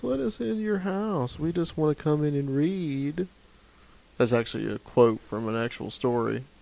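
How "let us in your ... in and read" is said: put-on gentle, soft, hypnotic, pitched-up child's voice. Podcast guest imagining how the kids talk, imitating soft-spoken kids. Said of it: "they're very soft-spoken, and they talk like this".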